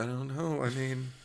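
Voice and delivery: very soft, hushed, numb, subdued murmur. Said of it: "in this kind of tone of voice".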